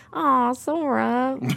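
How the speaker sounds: high, cutesy voice, name stretched out. Speaker describing a cartoon duck being cutesy beside them, Donald Duck voice. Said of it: "That's my Donald Duck voice".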